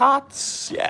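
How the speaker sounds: voice breaking up at very high pitch. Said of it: "My voice just cracked".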